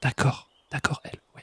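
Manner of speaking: whispering. Talking with a second person while both whisper; whispering. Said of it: "je chuchote parce qu'elle chuchote".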